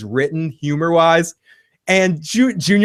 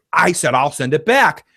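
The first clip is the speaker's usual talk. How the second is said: put-on bitchy, catty tone. Retelling a scene, Carmela answering Tony's complaint about spending; mock-bitchy as Carmela. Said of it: "she like says it really bitchy".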